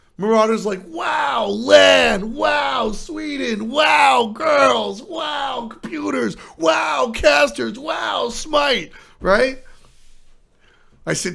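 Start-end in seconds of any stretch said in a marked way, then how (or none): 0.9-8.9 put-on very slow, high, delighted child voice, drawn-out. Retelling how a young player acts at a tournament: imitating a happy, excited kid. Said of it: "He's just happy to be at lan".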